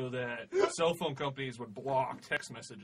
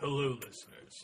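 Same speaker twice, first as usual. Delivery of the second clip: mock-sultry, sexy, seductive put-on voice. Opening a podcast news segment to listeners, sultry sexy voice. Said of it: "that was my sexy voice".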